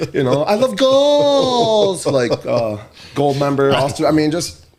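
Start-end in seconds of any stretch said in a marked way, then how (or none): 0.4-2.0 very high, loud cheer, "goals" stretched out. Retelling a reaction to a tying goal in a polar bear mask: imitating own loud goal cheer. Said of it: "Super loud".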